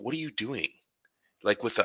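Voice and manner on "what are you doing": unsatisfied, displeased, disapproving tone, pitched up. Retelling a father's question on finding the speaker gaming: imitating an unsatisfied father. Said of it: "in an unsatisfied way".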